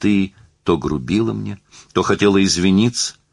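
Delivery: plain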